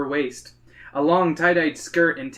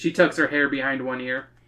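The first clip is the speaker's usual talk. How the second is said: ordinary delivery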